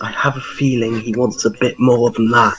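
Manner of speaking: quiet, half-whispered voice. Speaking in character to another party member after leaving a shop: half-whispering in character. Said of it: "I whisper this".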